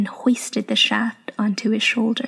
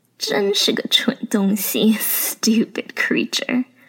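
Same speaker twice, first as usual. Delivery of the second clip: rough gleeful chortle, much slower. Gloating over something while leering at a small girl: rough gleeful chortle. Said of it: "his rough voice catching with glee".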